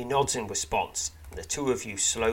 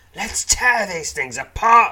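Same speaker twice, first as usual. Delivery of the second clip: very loud, high, fierce, swooping snarl; 9 semitones higher, 13 dB louder than usual. The narrator voices a character leaping at rat men with his sword, snarling. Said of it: "he snarls".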